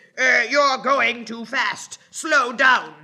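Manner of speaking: furious, very loud, angry shouting. Reading a story, the conductor yells at the driver: angry shout. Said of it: "shouted in an angry voice".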